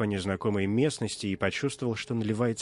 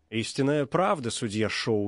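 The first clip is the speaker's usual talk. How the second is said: usual speaking voice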